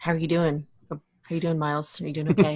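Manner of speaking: soft, tender, seductive, soothing murmur. Recapping an episode where Julian tends to Miles, imitating Julian's soft, sexy voice. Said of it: "speaking to him like very like soft and sexy".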